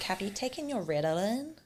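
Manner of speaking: put-on, TV-style American accent. Quoting a line from American TV shows, in a put-on American accent. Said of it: "That's my American accent, by the way".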